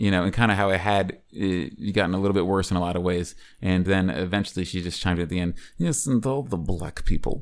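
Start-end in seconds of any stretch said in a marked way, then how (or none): 5.8-7.4 put-on Russian accent. Retelling what a woman said about the neighborhood, speaker quotes her in a Russian accent. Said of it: "in her Russian accent".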